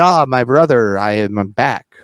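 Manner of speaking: corny, hammed-up, cheesy, hokey wrestler voice. Acting out Jeff showing up for his brother: cheesy Jeff Hardy impression. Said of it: "Cheesy Jeff Hardy there".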